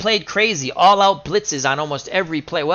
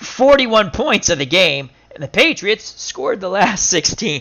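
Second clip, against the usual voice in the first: words choked out through hard laughter. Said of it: "I'm laughing so much I'm choking".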